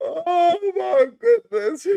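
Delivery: high, slow, helpless laughter, cracking up.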